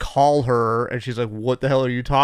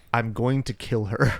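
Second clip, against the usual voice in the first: mock dead-serious, grave, no joking at all; 4 dB quieter than usual. Retelling what the dean said when asked about Julia: imitating the dean, all serious. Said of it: "the dean gets all serious and says".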